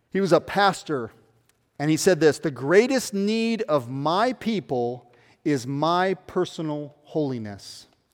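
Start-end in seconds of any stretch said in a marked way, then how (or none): 2.4-7.9 slow, deliberate, each word laid down with care. A speaker quoting a famous pastor's words to listeners, slowly. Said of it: "I'll say it slowly".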